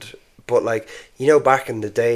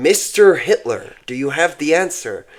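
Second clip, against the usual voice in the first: off-kilter put-on American accent, pitched up; 5 semitones higher, 4 dB louder than usual.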